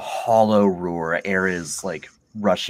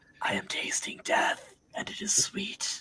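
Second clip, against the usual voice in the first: slow, breathy, dying whisper; 9 dB quieter than usual. Voicing a villain who hits the ground, dying: dying villain's last words. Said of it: "he's like the villain who can't quite die".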